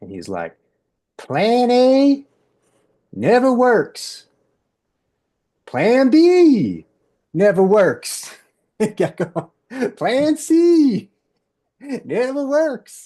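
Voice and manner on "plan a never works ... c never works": put-on high, slow Texas accent. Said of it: "Texas accent".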